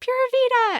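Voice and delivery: mock little-voice scream, tiny and very high squeal. Retelling a beach moment when Hannah ran by, screaming in Hannah's little voice. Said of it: "screams in her little voice".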